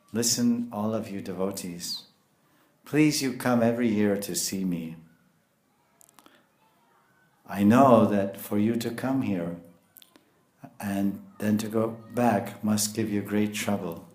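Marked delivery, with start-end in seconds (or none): none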